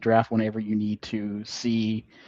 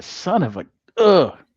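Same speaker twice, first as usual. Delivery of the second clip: shaken, rattled, flustered voice, pitched much higher; 8 semitones higher, 7 dB louder than usual. Speaker reacts as an attempt goes wrong, sounding shaken up. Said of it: "You sound like you're all shook".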